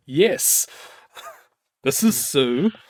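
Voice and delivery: loud, fake, exaggerated manliest-possible voice. Retelling answering a delivery guy's call, the speaker puts on a manly voice. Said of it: "I answer in my manliest fucking voice".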